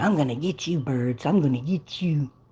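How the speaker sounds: put-on kitten voice. Watching a kitten, the speaker voices what it is thinking: voicing the kitten. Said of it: "But he's like".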